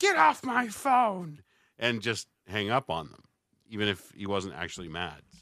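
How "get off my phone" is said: mock shrill, very high, screamy, drawn-out radio-host yell. Retelling how a radio announcer hung up on callers: imitating someone screaming. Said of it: "very, very, like, screamy".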